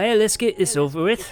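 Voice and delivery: put-on, loud, high-pitched Scottish accent. Game master voices the warden after she smells alcohol: Scottish accent. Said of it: "she's got a Scottish accent now".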